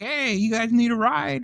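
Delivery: cheery very high acted voice. Retelling a friendly truck driver's offer of a ride: imitating a jovial friendly voice. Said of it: "he's so jovial".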